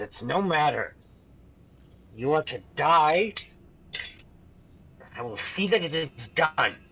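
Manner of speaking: menacing snarl. Voicing a tiefling who threatens the party before battle: snarling.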